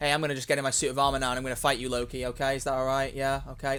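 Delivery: low, flat, level monotone drone. Imagining a flat film line to mock poor voice acting: flat monotone Tony Stark. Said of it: "if Robert Downey Junior is playing Tony Stark and he just went".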